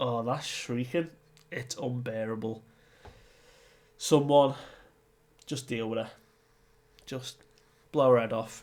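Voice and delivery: normal talking voice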